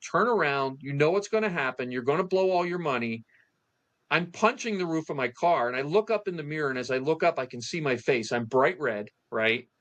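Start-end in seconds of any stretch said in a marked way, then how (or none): 0.1-3.2 put-on urgent, pressing, self-scolding tone. Retelling driving toward the casino: retelling screaming at himself. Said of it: "I'm screaming to myself".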